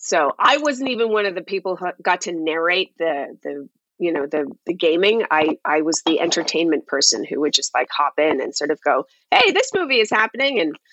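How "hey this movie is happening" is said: high, obnoxious, over-the-top peppy acted host voice. Retelling an old hosting gig: imitating own obnoxious high-energy host voice. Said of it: "that really obnoxious, high energy".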